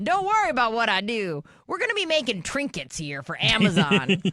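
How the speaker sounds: scheming, evil villain voice. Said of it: "you sound like an evil villain from a T V show".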